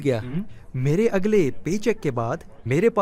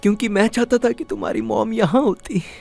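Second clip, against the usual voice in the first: tearful, crying voice; 4 semitones higher than usual. A father answers his daughter, who asked why he is crying: tearful, crying. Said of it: "आप रो क्यों रहे हो?".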